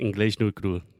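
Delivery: carioca Portuguese accent from Rio de Janeiro. A guest, asked about his accent, repeats the show's name in a carioca accent. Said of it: "with a carioca accent?".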